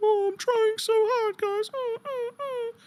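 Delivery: very high-pitched, drawn-out wounded puppy voice. Mocking how someone begged for help: imitating Glammy as a wounded puppy. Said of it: "she was like that wounded puppy".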